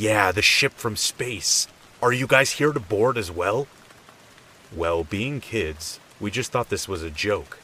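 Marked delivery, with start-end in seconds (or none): 0.0-3.7 self-assured tone. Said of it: "in his confident voice".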